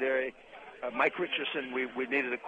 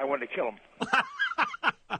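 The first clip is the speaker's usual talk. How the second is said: ordinary talk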